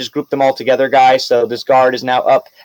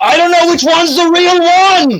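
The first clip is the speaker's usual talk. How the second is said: much higher, loud, panicked knight voice. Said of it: "he's like".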